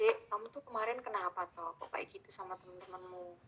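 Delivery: gentle, very quiet, calm, hushed, level talk. Showing how a parent talks calmly to a child, in a calm, level tone. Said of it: "kalau misalnya kita kondisinya tenang, terus kita ajak ngobrol".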